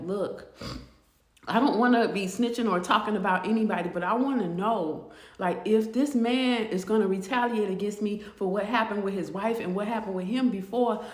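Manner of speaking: ordinary talk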